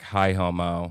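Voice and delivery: very low, flat, deadpan monotone with no lift. Retelling how she greeted the speaker on realizing it was them, imitating a flat monotone. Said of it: "literally in that monotone".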